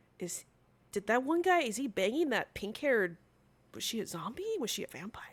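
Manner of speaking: hushed, very quiet half-whispering. Voicing ship crew gossiping about a crewmate: half-whispering to each other. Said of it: "they're whispering to each".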